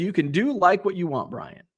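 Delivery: ordinary delivery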